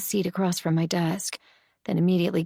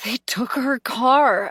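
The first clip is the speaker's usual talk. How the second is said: raised, pitched-up, rasping hoarse voice; 5 semitones higher, 5 dB louder than usual. Reading a novel aloud, a friend answers a worried question: hoarse rasp. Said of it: "she says in a hoarse rasp".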